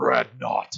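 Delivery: throaty, guttural voice driven from chest and diaphragm. Showing how the name should be said, guttural 'Dreadnought'. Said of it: "Just how it gets guttural like that".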